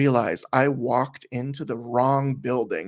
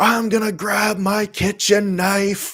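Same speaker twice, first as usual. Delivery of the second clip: acted-out scream, higher and louder; 8 semitones higher, 5 dB louder than usual. Retelling what a man screamed at the speaker: imitating someone screaming. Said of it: "he was screaming".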